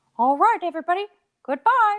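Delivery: very high-pitched cartoon mouse voice. Signing off the show at another speaker's request, in a Mickey Mouse voice. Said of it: "your Mickey impersonation".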